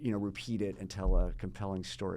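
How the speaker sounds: ordinary talk, nothing marked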